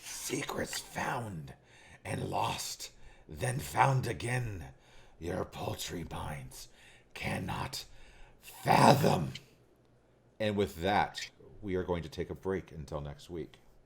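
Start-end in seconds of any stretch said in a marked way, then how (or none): 0.0-9.3 husky, hoarse, slow, rasping voice. A storyteller voices a creature as it speaks, in a hoarse voice. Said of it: "in a hoarse voice, it speaks".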